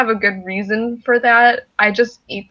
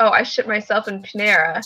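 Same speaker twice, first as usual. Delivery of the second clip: ordinary talk, nothing marked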